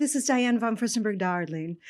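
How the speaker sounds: spot-on put-on accent, "darling" drawled out. Retelling a phone call from Diane von Furstenberg: Diane von Furstenberg accent. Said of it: "the accent was so good".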